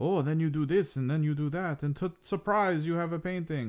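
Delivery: put-on heavy, lively German accent. Imitate a German painter in a smock on his PBS show, with a very thick, energetic German accent. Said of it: "very thick accent".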